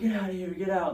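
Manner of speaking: high, mock police yelling.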